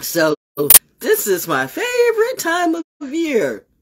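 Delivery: very high sing-song, swooping sarcastic gush. Opening a Thursday greeting, sarcastic. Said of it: "Cue the sarcasm".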